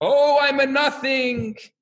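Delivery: high, very slow, stretched-out, very drawn-out screaming. Telling a story of two yeshiva students in a study hall at night, retelling a scream. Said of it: "And the other one's screaming".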